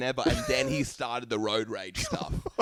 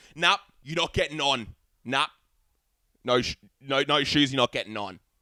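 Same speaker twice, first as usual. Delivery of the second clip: put-on raised angry voice; 4 dB louder than usual. Retelling a bus driver refusing a passenger without shoes: imitating a raised angry voice. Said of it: "he raised his voice and was, like, really serious".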